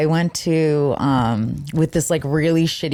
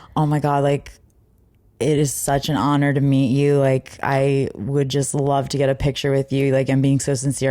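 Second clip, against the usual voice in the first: usual speaking voice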